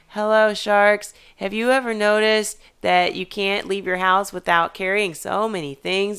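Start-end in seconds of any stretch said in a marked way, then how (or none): 0.2-1.2 very monotone, dead flat, level pitch. Showing how a pitch to the sharks could sound: very monotone. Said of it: "if they need me to sound very monotone, like".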